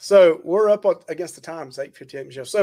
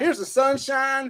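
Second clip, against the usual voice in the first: put-on, pitched-up high Southern US accent; 8 semitones higher, 5 dB quieter than usual. Retelling the party blessing, voicing God with a Southern accent. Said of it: "God had that kind of accent".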